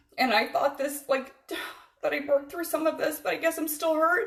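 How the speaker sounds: very high, tearful voice, crying through it. A woman starting to tell her story to listeners, crying. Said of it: "Don't apologize when you're crying".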